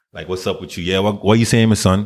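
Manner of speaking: speaking in Caribbean patois. Speaker demonstrating how they talk with friends, caribbean patois accent. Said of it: "I would be talking like this".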